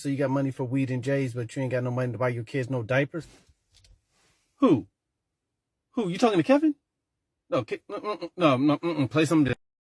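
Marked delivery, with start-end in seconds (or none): 0.0-3.3 put-on little girl voice, higher. Retelling two kids' dramatic play, imitating a little girl in pretend play. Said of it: "And the girl says".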